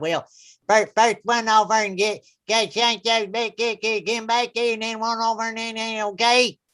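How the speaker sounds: put-on thick, heavy Southern accent, hard to follow. Retelling what a little kid on grandfather's farm kept saying: thick Southern accent. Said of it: "such a thick Southern accent you can't understand them".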